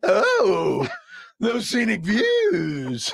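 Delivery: creepy put-on voice, very high, swooping, eerie. Radio host redoing a bit another host does better, in a creepy put-on voice. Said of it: "who sounds creepier".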